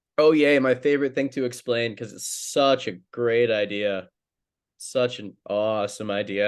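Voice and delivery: laced with sarcasm. Asked to explain a hockey draft idea he thinks sucks, speaker answers: sarcastic tone. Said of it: "I hope people detect the sarcasm in my voice".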